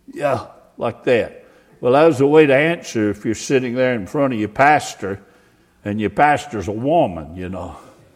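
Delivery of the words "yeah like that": mock shy, hesitant, timid and meek voice. Retelling a man's reply to her question, the pastor imitates a timid voice. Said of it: "he responded with a real timid voice".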